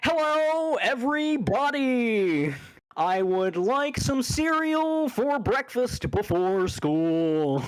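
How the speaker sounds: put-on very high, very slow little-kid voice. Imitating how a kid sounds, like False's voice. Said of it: "apparently that just is False's voice".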